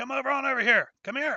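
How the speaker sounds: very high-pitched, loud, carrying yell. Voicing a character who waves the party over from the counter: shouting in character.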